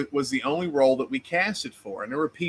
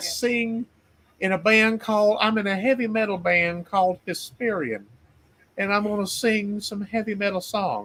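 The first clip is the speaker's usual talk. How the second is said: put-on pitched-up old-South southern belle accent; 7 semitones higher than usual. Impersonating a woman who sounds this way on the phone: Gone with the Wind southern accent. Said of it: "she sounds like uh, effing Gone with the Wind".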